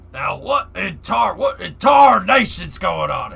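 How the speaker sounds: loud, rough cartoon cowboy holler. Speaker tries out cartoon voices, doing a Yosemite Sam voice. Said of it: "that doesn't sound like Yosemite Sam at all".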